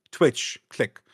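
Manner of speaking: ordinary talk, nothing marked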